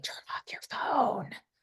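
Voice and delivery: hushed, soft, breathy whisper, barely voiced. Retelling what they say when someone's phone is on, whispering. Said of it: "I widely whisper".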